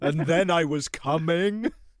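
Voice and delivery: put-on slow Southern movie voice. Joking about a friend's impression, mock Forrest Gump voice. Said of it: "him pretending to be Forrest, Forrest Gump".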